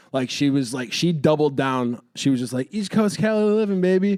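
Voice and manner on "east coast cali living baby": mock drunk girl voice, pitched up, boastful. Retelling what a partying girl said after a show: imitating a drunk girl. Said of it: "drunk girl doing the whole drunk girl thing".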